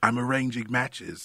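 terrible, high, put-on British accent. Retelling a bit about british films: terrible british accent. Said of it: "I'm doing a terrible British accent".

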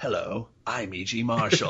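smooth, announcer-style radio host voice. Recalling the horror radio announcer's intro: E G Marshall impression. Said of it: "he's like".

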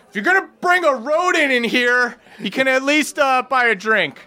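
very high, shrill hollered yell. A half-orc woman behind the bar calls to a newcomer who brought a rodent, yelling. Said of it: "just yells".

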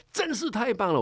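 very high, yelled-out outburst. Retelling how he suddenly yelled out while reading in the study, retelling a loud shout. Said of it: "大叫一声".

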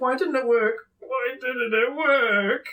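grumbling mumble, repeated quietly under the breath. Voicing a character who walks away: muttering under his breath. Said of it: "he walks away muttering under his breath".

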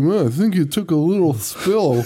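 fake lethargic, downcast delivery. Retelling a film scene, imitating the mopey dad character: imitating a mopey, lethargic man. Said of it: "lethargic piece of shit".

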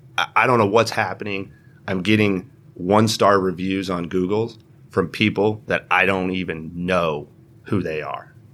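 plain

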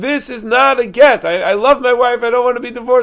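put-on screaming. Recounting a husband who refuses the divorce, retelling his screaming. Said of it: "He's screaming".

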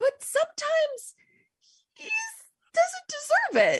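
squeaky, shrill, very high-pitched little voice. Retelling the speaker's own reply to an imagined angel: high-pitched voice. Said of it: "said it in that high pitched voice".

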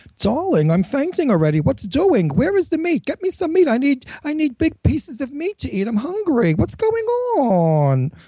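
Queens accent, woman's voice. Showing how a planned character, a woman from Queens, speaks: Queens woman voice. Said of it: "she speaks like this".

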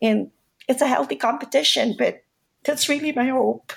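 heartfelt, sad, emotional, moved voice. Speaking about hopes for filipino businesses succeeding together, getting emotional. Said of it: "I'm sorry for getting emotional".

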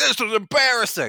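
acted, very high-pitched screaming, yelling rant. Picturing a coach with a mouthful of hot dogs yelling at the crowd: imitating John Tortorella yelling. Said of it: "yelling at the crowd, like".

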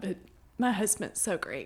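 choked-up, emotional voice, welling up with feeling. Describing a hard time in their life, getting emotional. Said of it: "I'm gonna get emotional talking about it".

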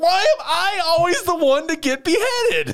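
high, slow, whiny tantrum squeal.

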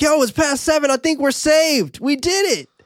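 put-on, very high yelling. Retelling a scene where Ryuji calls down into a well: imitating Ryuji yelling down. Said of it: "Ryuji yelling down".

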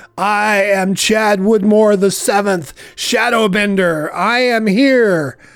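shouting out. Playing chad, striding to the clearing's entrance to announce himself: yelling out. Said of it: "yell out".

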